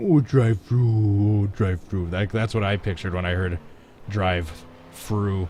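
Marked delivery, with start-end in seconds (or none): 0.0-2.1 put-on baby talk, like a little baby. Streamer repeats a phrase the way it sounded to him, in baby talk voice. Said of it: "It was like baby talk".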